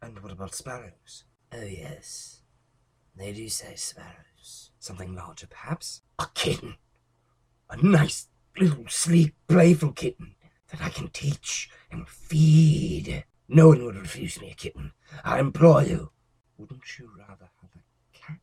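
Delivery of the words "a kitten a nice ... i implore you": very loud, high, eager pleading at full voice. An asylum inmate answers the doctor; Renfield, pleading. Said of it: "it's life I ingest. Gives back life to me, just as the spiders eat the flies. / Mister [name]?".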